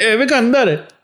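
high, loud, excited cheering call-out. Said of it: "I was going".

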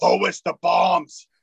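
put-on bad German accent. Talking about looking out for the bad guy, in a bad German accent. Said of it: "I do my bad German accent".

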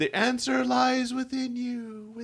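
very high, very slow guru voice trailing away. Imitating a space camp guy who then walks away, in a trailing voice. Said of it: "You need that trailing voice".

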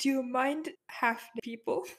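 really quiet, soft, hushed half-whisper. Opening the door and speaking aside to a friend: half-whispering really quietly. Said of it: "I'm gonna whisper really quietly to Care".

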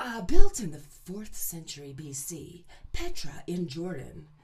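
very loud, polished, swooping voiceover narration. A former voiceover artist shows off professional voice: professional voiceover voice. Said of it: "that's how I would do my professional voice".

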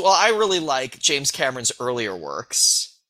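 ordinary talk

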